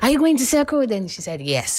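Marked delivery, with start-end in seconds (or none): 0.0-0.9 very high-pitched shouted call. Retelling calling out to a passing car about going to Circle, retelling a shout. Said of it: "And I shouted".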